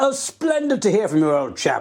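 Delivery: put-on, really posh upper-crust voice. Imagining how a phone call might have been answered: really posh voice. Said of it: "you'd had like a really posh voice".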